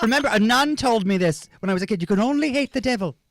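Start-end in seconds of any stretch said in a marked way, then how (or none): 2.0-3.1 put-on Irish accent, higher pitch. Retelling what a nun said, imitating her Irish accent. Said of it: "With a little accent like that".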